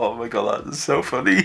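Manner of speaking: crying with laughter. Finding something hilarious, the speaker is laughing to tears. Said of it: "I'm crying".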